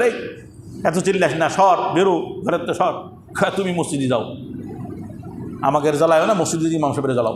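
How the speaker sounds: ordinary talk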